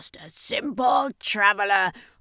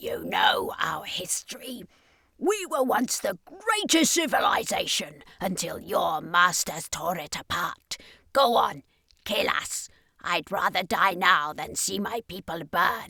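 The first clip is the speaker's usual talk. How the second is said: spat-out, bitter, defiant sneer; 3 dB quieter than usual. Narrating a story, the alien answers the circus master: sneering alien. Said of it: "sneered the alien. / said the man. / sneered the alien".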